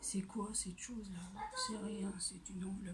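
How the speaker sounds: soft, unvoiced whisper.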